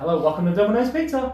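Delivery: perky phone voice. Retelling answering the phone at Domino's Pizza, in a put-on perky phone voice. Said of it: "With a perky voice. So a, a tonality".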